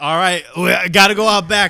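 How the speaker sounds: loud mock confrontational, challenging tone.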